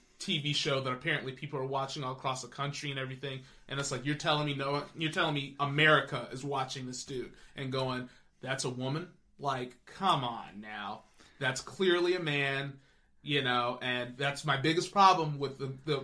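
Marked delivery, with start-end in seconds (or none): none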